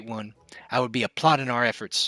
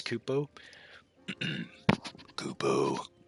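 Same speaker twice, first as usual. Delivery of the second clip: bottomed-out bass, very low and very quiet; 10 semitones lower, 9 dB quieter than usual. Reading game dialogue aloud, voicing a character in a deep voice. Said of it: "Deep voice".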